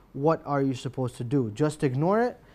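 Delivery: plain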